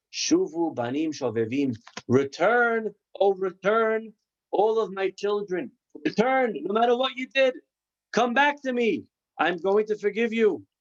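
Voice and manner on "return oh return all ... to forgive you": high, weeping voice calling out. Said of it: "the voice was crying and saying".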